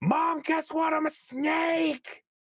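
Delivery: very high yell with snake drawn out. Narrating a scene, the character calls to his mom from the top, yelling out. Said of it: "and he yells out from the top".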